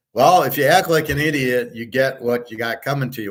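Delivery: ordinary delivery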